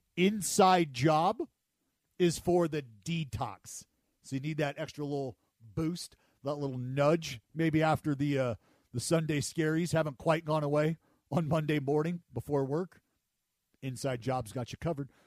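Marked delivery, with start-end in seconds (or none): 0.2-3.9 very slow, drawn-out, raised emphatic delivery. Repeating a product line for listeners who need volume: said slowly. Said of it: "let me say that again slowly".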